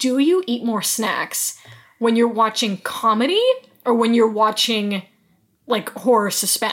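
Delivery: ordinary delivery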